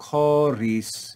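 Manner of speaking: pitch falls across Choris. Reading a word with a grave accent aloud: falling pitch on choris. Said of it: "you see a grave accent telling us to fall".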